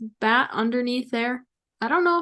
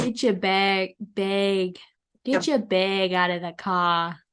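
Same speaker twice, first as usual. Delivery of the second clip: put-on East Coast accent; 3 semitones lower than usual. A speaker shows off their own East Coast voice, East Coast accent. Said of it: "My East Coast voice".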